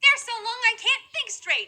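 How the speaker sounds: high, slow, whiny complaining schoolgirl voice.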